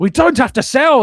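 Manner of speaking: near-tearful scream, very high, shrill and very loud. Recalling a Newcastle fan ringing a Talksport interview, imitating a screaming fan. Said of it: "He's screaming".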